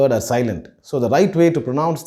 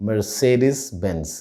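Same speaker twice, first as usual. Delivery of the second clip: Mercedes said with stress on the second syllable, ce; 4 semitones lower, 3 dB quieter than usual. Explaining the right way to say the car brand: stress on ce. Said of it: "with an emphasis on the say".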